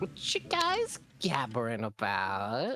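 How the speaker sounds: put-on valley girl voice. Joining the group's conversation as Roxanne, in a valley girl voice. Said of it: "being a valley girl for Roxanne".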